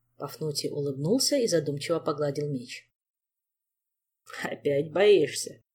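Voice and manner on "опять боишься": mocking, teasing. Narrator reads a father's question to Pafnutiy, mocking. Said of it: "насмешливо поинтересовался отец".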